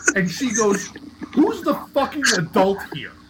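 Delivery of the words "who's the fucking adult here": acted high, scolding yelling. Retelling how a mother reacted on walking in: imitating mother yelling. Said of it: "starts yelling at me".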